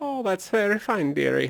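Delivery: put-on old woman voice, light Scottish. An actor performing an exaggerated old woman character: raised-pitch old woman, light Scottish. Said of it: "raised the pitch of his voice and lightly tinged the performance with a bit of a Scottish dialect".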